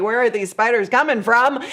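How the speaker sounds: plain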